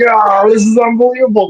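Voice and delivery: mock very high, overjoyed, wild, going-nuts cheer. Retelling celebrating a home run with a five-year-old: imitating own wild celebrating. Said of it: "I'm going nuts".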